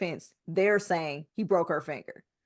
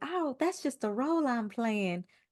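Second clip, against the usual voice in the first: timid, shrinking, meek, high little voice; 6 semitones higher, 4 dB quieter than usual. Mocking an actor's soft interview manner: imitating a meek little voice. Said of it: "be this meek little person like".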